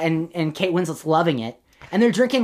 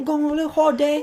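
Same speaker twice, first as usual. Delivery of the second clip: bad fake British accent, higher pitch; 10 semitones higher than usual. Showing what British people call going on vacation, in a terrible British accent. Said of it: "A little terrible accent".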